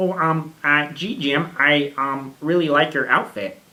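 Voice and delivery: loud puppet voice, hemming and stumbling. Trying out a voice for the others, in an Ernie from Sesame Street voice. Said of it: "that's a really good Kermit".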